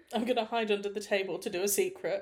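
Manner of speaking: ordinary talk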